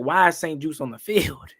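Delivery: ordinary talk, nothing marked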